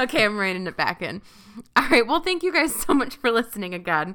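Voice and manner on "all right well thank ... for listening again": speaking through laughter, louder. Thanking listeners at the end of an episode, laughing while talking. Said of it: "Let me try that again without laughing".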